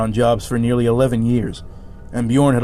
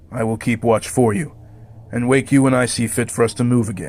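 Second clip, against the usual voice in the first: cold, flat, level delivery. Reading a story aloud, the knight speaks to the resting companions, cold and flat. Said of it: "His cold voice held a noticeable tinge of triumph. / His cold voice held a noticeable tinge of triumph. / His cold voice held a noticeable tinge of triumph. / he said flatly. / Save the sword of [name".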